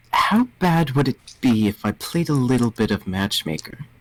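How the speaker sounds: hushed whisper. Voicing a character who leans over to Hugo: whispering. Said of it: "leans over to Hugo and whispers".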